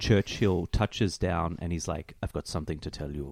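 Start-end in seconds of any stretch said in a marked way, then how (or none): 2.2-3.3 put-on, laid-on German accent. Pitching a movie scene where Churchill arrives: Churchill in a German accent. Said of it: "in his famous German accent".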